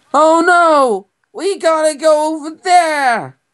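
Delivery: very high, weird-sounding, odd tone. Speaker describes how a rewatched Pokemon episode sounds; Ash voice from Pokemon. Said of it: "he speaks in a weird tone where he's like".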